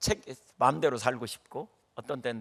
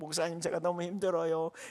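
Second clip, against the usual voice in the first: mock sobbing, tearful, crying voice; 5 semitones higher, 5 dB quieter than usual. Pastor retells a congregant who cries on meeting him: imitating someone crying. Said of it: "막 울으면서 뭐라 그러냐면 이렇게 말해요".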